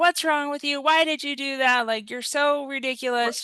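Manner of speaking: scolding tone, pitched high. Showing how yelling at a child would sound: imitating a parent yelling at a child. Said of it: "if I would have just started yelling at him".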